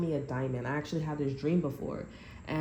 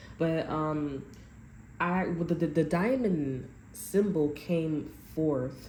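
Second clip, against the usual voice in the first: halting stutter, repeated words, words catching. Talking to viewers on camera, stuttering. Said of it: "I don't know why I'm stuttering".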